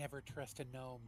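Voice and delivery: theatrical stage whisper. As gnomes wave from windows, a character warns the party in a stage whisper. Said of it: "kind of stage whispers to the party".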